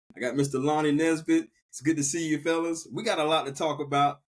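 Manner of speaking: normal talking voice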